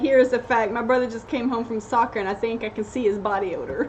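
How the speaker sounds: normal talking voice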